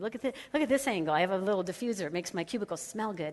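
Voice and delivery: ordinary talk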